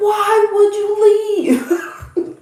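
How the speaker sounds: very high, very slow, drawn-out yelling. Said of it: "Then I'm yelling at him".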